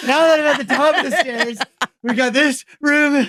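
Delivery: acted tired, out of breath. Retelling walking up stairs while filming a walkthrough: imitating being tired. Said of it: "and Winding getting tired".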